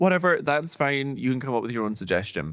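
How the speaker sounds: normal talking voice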